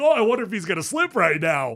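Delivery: talking through little giggles, laughing throughout. Retelling what an announcer said while laughing and giggling: imitating someone laughing while talking. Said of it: "laughing and giggling, like".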